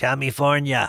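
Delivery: put-on the word "california" pronounced with an Austrian accent. Saying the state's name the way Governor Schwarzenegger did: Schwarzenegger Austrian accent. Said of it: "That's exactly the way Governor Schwarzenegger used to say it. Doesn't that sound like Schwarzenegger?".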